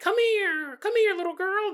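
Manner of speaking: very high-pitched, squeaky cartoon voice. Describing ghosts posing as cartoon characters to lure a girl: Mickey Mouse impression. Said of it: "that was my Mickey Mouse impression".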